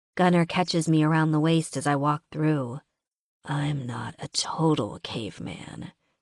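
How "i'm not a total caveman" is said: low, slow, soft growl, close to the ear. Reading the story aloud, the narrator voices Gunnar's line: growling. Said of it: "he growls into my hair".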